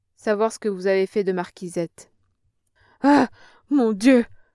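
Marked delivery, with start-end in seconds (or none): 3.0-4.3 frantic, very loud, high panicked rasping cry. Questioned by a threatening man, the old woman cries out, rasping in panic. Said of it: "Râla tout affolée la mère Bachu".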